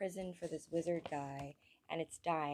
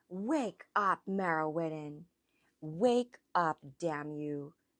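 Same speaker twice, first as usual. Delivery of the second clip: calm, controlled voice barely masking rage; 7 dB louder than usual. Reading a story, a character commands a wizard to wake up, barely veiled rage. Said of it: "the calm control in his voice barely veiling his rage".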